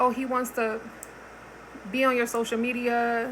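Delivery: ordinary talk, nothing marked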